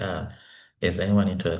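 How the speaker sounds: plain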